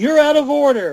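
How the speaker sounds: high-pitched yelling. Recalling a courtroom bit defending Howard the Duck, retelling own yelling. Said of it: "I start yelling".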